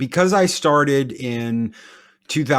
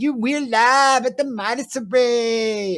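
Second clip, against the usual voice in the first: put-on Valley Girl voice with "Array" drawn out; 11 semitones higher than usual. Mocking how a character sounds, doing Valley Girl Loki. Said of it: "Valley Girl Loki".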